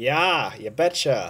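put-on Minnesota accent. Acting out people in Florida hearing you are from Minnesota, in a stereotypical Minnesotan accent. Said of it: "all Minnesotans talk like that".

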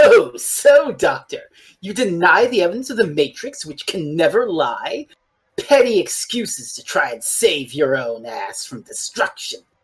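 put-on smug, slow, lording-it-over tone. Retelling how the Valeyard answers the Doctor at the trial: smug Valeyard voice. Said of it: "the Valyard will be all smug".

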